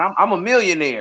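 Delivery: ordinary talk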